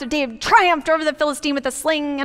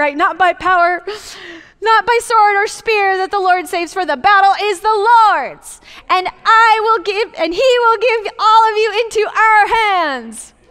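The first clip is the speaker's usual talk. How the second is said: voice climbing higher and higher, declaiming; 5 semitones higher, 4 dB louder than usual. Delivering a monologue to the audience, voice getting higher. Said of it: "My voice is just getting higher and higher".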